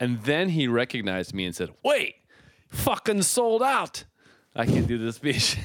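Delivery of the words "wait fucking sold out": put-on very high, slow, drawn-out Irish accent. Retelling what a man said on recognizing the speaker, in an irish accent. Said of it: "That's a spot on Irish accent".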